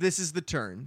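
ordinary talk

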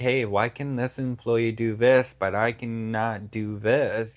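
normal talking voice

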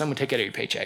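low, soft, teasing, half-joking tone. After apologizing to him for a mistake, retelling his reply, retelling his joking threat. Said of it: "he actually did jokingly goes".

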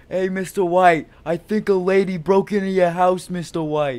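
loud, high, hollered call. Retelling how a friend yelled from the car window, a yelling Jesse Pinkman impression. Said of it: "my friend was yelling out of my car window".

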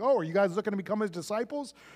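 mock cheeky, sassy tone. Retelling the teenager's comeback to the Pharisees: imitating a sassy reply. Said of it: "this great sassy line like".

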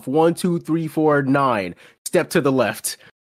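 strict, no-nonsense, stern, professional official tone. Retelling how a ride attendant counted the group off: imitating a stern, professional "I'm in charge" voice. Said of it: "With the most stern, professional, like, just, like, "I'm in charge" voice".

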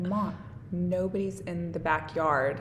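ordinary delivery

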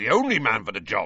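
ordinary delivery

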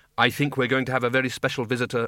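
ordinary delivery

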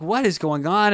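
ordinary delivery

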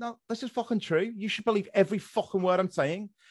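Liverpool Scouse accent. Imitating a Scouser insisting he should be believed: Scouse accent. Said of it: "But if a Scouser goes".

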